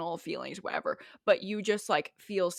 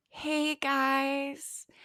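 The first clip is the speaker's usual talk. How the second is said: slow, pitched-up drawl, guys stretched out; 6 semitones higher than usual. Speaker mimics the girls in a friend group who talk really slowly: talking really slowly. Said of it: "the girls who, like, talk really slowly".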